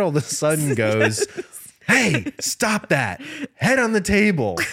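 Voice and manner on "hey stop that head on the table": acted high, swooping yelling. Recounting a dad yelling at his misbehaving kids, retelling a dad's yell. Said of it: "The dad yelled".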